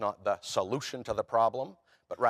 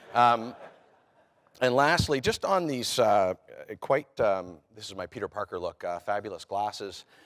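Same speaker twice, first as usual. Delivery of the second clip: usual speaking voice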